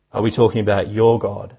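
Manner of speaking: strong stress on your with a falling pitch.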